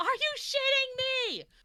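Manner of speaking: very high, out-of-control, all-out screaming. A tabletop player's character without a silver weapon loses it, screaming into the trees. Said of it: "just absolutely screaming into the trees".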